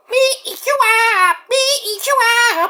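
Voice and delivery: very high, pushed-up cartoon character voice. Doing a cartoon monster threatening to eat someone: Majin Buu voice. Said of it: "All right, Majin Buu, get out of here".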